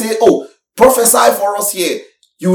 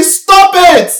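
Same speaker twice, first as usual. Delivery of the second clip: emphatic, loud, high-pitched shout; 11 semitones higher, 5 dB louder than usual. A speaker shows how they shout to make a point stick; shouting. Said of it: "Every shout".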